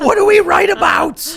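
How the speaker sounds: high, loud, slow, panicked and desperate shout.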